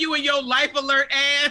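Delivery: ordinary talk, nothing marked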